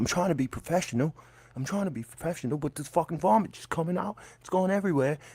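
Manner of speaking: put-on English accent throughout. Retelling what a man with an English accent said, in an English accent. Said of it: "he's got this English accent".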